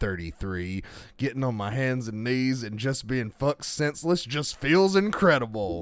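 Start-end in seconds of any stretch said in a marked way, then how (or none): none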